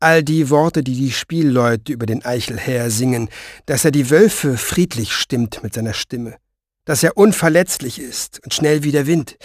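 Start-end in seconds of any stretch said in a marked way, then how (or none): none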